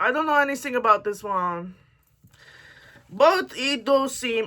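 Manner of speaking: clumsy, bad French accent that barely lands. Talking about a book while trying on an accent, bad French accent. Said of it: "I'm trying to do a French accent and I'm very much failing".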